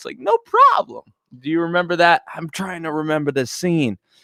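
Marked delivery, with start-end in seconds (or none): 0.2-1.0 very high, pitched-up, confident little voice. Recalling a line from a remembered scene: Michael Jordan high voice. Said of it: "when Michael had that, had that high voice".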